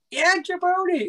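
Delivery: squeaky, very high-pitched mic-effect voice. You are retelling how The Rock took the mic and started talking: The Rock with a squeaky voice.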